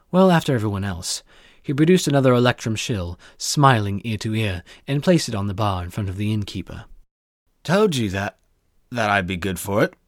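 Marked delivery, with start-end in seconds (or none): 7.6-9.9 put-on drunk, slurred speech. Reading a tale aloud, a tipsy merchant boasts to the innkeeper: drunk slurred speech. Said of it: "in that unique accent that all drunk men share".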